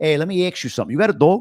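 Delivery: put-on Long Island accent. Recalling moving upstate as a kid, the speaker demonstrates his old Long Island accent. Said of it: "this is what I sounded like".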